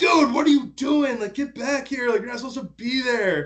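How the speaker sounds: put-on very high-pitched, shouted, hollering yell. Retelling how they all yelled at a golfer walking onto the fairway, retelling a yell. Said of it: "we all start yelling like".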